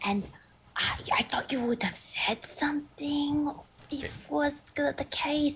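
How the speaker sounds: whispering. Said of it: "I'm kinda whispering this into the bark".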